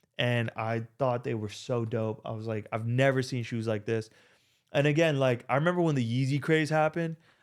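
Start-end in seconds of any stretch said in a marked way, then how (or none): none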